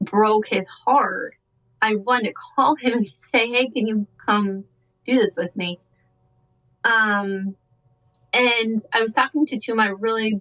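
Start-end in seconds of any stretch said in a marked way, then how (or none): none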